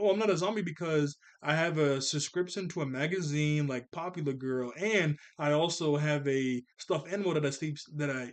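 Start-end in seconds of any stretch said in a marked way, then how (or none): none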